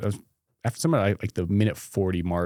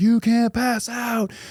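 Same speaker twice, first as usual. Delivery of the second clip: put-on scream, higher and louder; 5 dB louder than usual. Retelling lying injured on a mountain, imitating screaming at himself. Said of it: "screaming at myself on the mountain".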